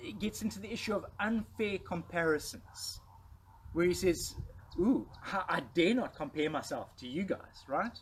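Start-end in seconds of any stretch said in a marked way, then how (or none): 4.8-7.6 acted wry tone with a touch of sarcasm. Quoting Paul comparing himself to rivals: imitating Paul being sarcastic. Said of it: "Paul gets a little bit sarcastic here".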